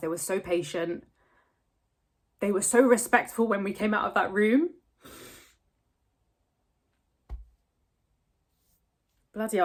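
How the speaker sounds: crying while talking. Recounting a late vet appointment to the camera, crying while talking. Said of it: "I managed that long without crying".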